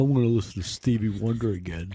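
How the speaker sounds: put-on earnest, old-school nerdy voice. Doing an impression of Earl as a Grammy voter: Earl impression. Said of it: "That's my impression of Earl".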